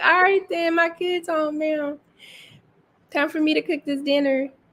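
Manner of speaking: sweet, cute, high little Southern drawl. Teasing a friend by imitating her, cute little southern accent. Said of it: "In your cute little Southern accent".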